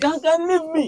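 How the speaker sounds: put-on screaming. Retelling being hugged too tightly after a game: imitating his own screaming. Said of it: "I started screaming".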